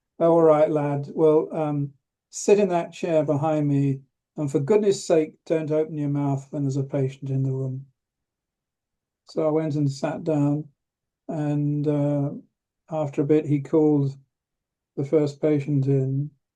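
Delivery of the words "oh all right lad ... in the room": plain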